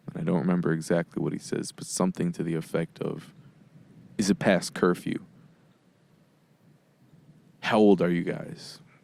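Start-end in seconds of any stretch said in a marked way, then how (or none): 4.2-8.8 imitated aggressive manner. Retelling a stranger on a bicycle questioning them: imitating an aggressive tone. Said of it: "his tone was immediately aggressive".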